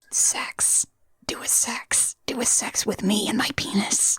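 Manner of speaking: slow, hushed whisper, very close. Acting out a movie character's line to the lady he saved: imitating a whisper. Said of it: "he definitely whispers in her ear".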